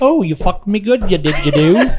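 mocking fake English accent. Joking with friends about meeting a girl over there, the speaker mocks her accent. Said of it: "That fucking accent is living hell".

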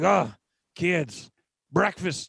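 put-on character voice of a big man. Imitating Big Q calling the kids to breakfast: Big Q impersonation. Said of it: "that's your Big Q impersonation".

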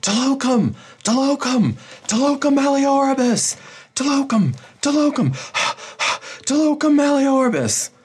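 very high, fear-stricken, terrified screaming. A man of her retinue calling for the way to be cleared, screaming in fear. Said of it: "starts screaming".

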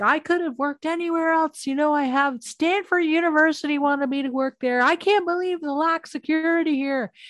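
mock angry, high yelling rant. Recapping a TV show scene where Brennan yells at a man, imitating Brennan yelling. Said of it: "So she's yelling at him".

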